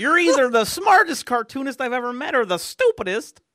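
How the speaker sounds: high, loud, old-time studio cartoon character voice. Retelling what a cartoonist told him at a convention: imitating R C Harvey. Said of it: "That is how he talks".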